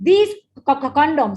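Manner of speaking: outraged, thundering voice.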